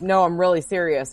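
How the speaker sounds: ordinary talk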